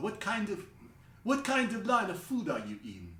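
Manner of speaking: put-on Italian accent. Retelling a talk with a stranger, voicing the Italian guy in an Italian accent. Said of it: "he has an Italian accent".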